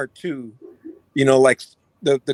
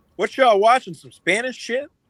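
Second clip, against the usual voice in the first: very loud, carrying, pitched-up, blunt tone; 7 semitones higher than usual. Retelling a late moviegoer's remark about a subtitled film: imitating someone saying it loudly. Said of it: "she said very loudly".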